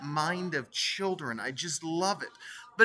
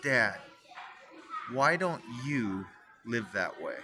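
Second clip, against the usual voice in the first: very slow, low, drawn-out, deliberate delivery; 6 semitones lower than usual. Retelling his four-year-old son's question to him: said real slow. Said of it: "says this real slow".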